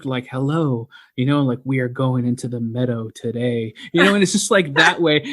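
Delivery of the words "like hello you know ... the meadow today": put-on, reserved, typical podcaster voice. Mocking how podcasters talk into the microphone, imitating reserved podcast voice. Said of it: "Like very reserved".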